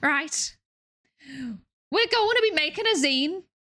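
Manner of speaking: bad put-on Scouse accent. Doing a Scouse accent challenge while making a zine, in a bad Scouse accent. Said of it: "doing a Scouse accent".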